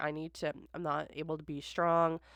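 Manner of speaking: ordinary talk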